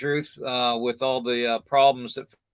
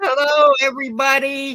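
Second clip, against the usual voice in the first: put-on very high, shrill, loud elderly aunt voice; 13 semitones higher, 8 dB louder than usual. Recalling the movie scene where the old aunt comes in, as the Christmas Vacation aunt. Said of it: "the old aunt comes in and goes".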